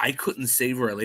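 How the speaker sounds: plain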